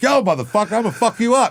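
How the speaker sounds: very high, street-tough voice thrown out high.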